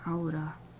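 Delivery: aura said with Japanese-style vowels. Talking to myself, pronouncing an English word: English word in Japanese accent. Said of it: "Start pronouncing English words in a Japanese accent".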